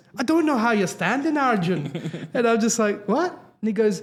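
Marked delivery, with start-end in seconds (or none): 0.2-2.3 put-on Irish accent, doctor-like delivery. Retelling what the doctor told the speaker about his heart, in an Irish accent. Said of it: "Irish accent".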